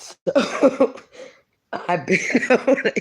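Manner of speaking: talking through laughter. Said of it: "excuse me for laughing".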